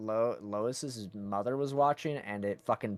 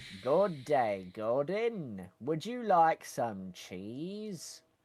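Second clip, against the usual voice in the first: slow, high, sing-song voice, drawn out, big swoops; 5 semitones higher than usual. Playing a game scientist as the cartoon character: Wallace voice. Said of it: "replace the Half-Life scientists with, uh, Wallace".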